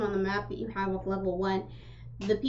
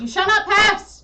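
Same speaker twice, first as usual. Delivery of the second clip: very high-pitched, shrill, very loud voice; 11 semitones higher, 14 dB louder than usual. Voicing a face that appears in a door, speaking to a player: door face speaking. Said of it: "a face appears in the door itself, and it just looks at you and goes".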